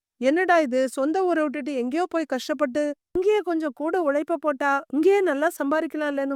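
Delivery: plain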